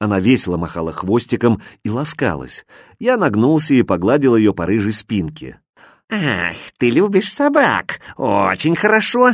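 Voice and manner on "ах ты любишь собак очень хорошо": sly, snide, mocking tone, slightly raised. The comma speaks to the narrator as he pets a dog, snide. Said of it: "ехидно сказала запятая".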